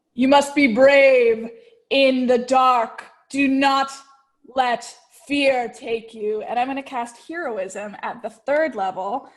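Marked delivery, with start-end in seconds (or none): 0.2-6.4 booming, loud, resounding voice. As a form appears in the rocking chair, Father Ox's booming voice. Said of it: "his voice fucking booms".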